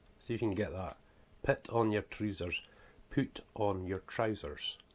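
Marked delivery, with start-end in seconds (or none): 1.4-4.8 strong, broad Scottish accent. Showing how people up here say a phrase: strong scottish accent. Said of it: "that's the way we speak though".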